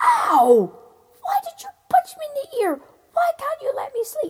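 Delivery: very loud, very high shouting. A giant hit in the ear by a stone shouts at his brother, shouting. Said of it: "he shouted to his brother".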